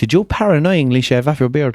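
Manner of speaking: ordinary talk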